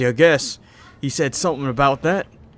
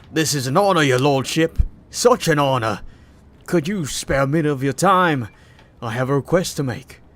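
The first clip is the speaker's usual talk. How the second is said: brutish character voice. A game master voicing the tall man who welcomed the players: Dagon's brute voice. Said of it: "so I'm gonna give him a different voice".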